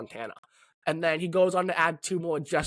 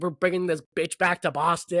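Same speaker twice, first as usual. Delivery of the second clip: usual speaking voice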